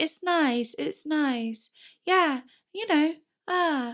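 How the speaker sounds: light, high, sweet, airy-fairy voice. Watching an old video, mimicking their past self: high sweet voice. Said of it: "Why is my voice so high and sweet then?".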